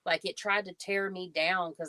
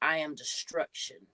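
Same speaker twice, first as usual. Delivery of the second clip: put-on demon voice; 2 semitones lower than usual. Retelling what demons say when they come: imitating a demon speaking. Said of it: "and they talk like this".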